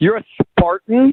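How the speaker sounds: loud, openly scornful, disdainful voice. Listening on the phone line, learning the other person is a Spartan: disdainful voice. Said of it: "so much disdain in your voice right now".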